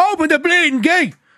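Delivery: put-on very high, shrill shout, North Dublin accent. Retelling how a man yelled at a Spanish guy, retelling a shout in North Dublin accent. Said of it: "in the North Dublin accent. So he's shouting".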